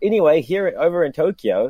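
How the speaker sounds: put-on Kiwi accent on every vowel. Quoting a host the speaker was talking to, in his Kiwi accent. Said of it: "in his Kiwi accent".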